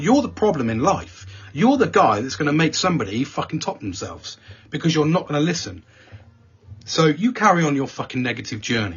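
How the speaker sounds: put-on, heated, passionate, fired-up rant. Recounting telling off a negative man in front of everyone, retelling a passionate rant. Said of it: "I get a bit passionate about that".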